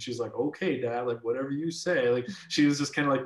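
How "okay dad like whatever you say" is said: dismissive, mocking, humoring tone. Retelling the daughter's reply to her dad: imitating a mocking reply. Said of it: "making fun of this idea of sending it".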